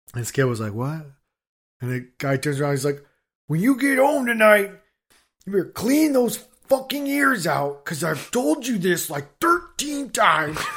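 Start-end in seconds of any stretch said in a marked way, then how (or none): 3.5-10.6 put-on, very high, furious, angry scolding scream. Retelling how a man turned around and yelled at a kid, retelling a man screaming. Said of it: "he's just screaming at this kid".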